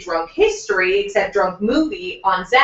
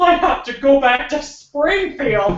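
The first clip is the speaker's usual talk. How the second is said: put-on drunken voice, higher pitched; 4 semitones higher than usual. Retelling what a wasted friend said at the theme park: imitating drunk Dwayne. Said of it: "just absolutely wasted, he turns to me and goes".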